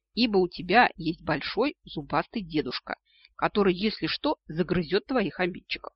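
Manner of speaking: plain reading voice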